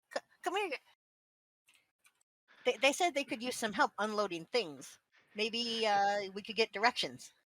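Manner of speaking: loud call, as if from far off. Calling friends over from the crate area: hollering across a distance. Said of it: "you're hollering at, uh, at us".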